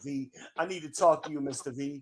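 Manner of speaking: mock tearful, crying, pleading tone. Retelling a phone call from a former employee: imitating someone crying. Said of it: "she called me one Saturday crying".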